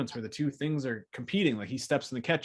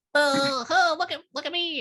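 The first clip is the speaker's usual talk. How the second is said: put-on kid voice, higher and louder; 6 dB louder than usual. Acting out the kid jumping in the movie's ball pit: imitating the kid. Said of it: "the kid is in there and he's like".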